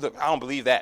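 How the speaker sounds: mock loud sharp voice. Imitating the same people rejecting teaching: imitating a raised voice. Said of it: "All of a sudden, your voice got up".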